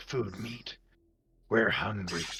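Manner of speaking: echoing, hushed, slow, eerie creature voice. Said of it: "it just keeps echoing throughout this cave".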